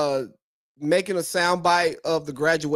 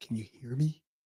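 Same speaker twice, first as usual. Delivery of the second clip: very quiet, barely audible half-whisper; 5 semitones lower, 10 dB quieter than usual. Showing another speaker how faint their audio sounds: imitating someone half-whispering. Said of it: "it sounds like you're whispering".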